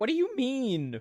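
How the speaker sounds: high voice cracking partway through. A streamer, feeling called out by chat, asks back with a cracking voice. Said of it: "My voice just cracked like I'm thirteen".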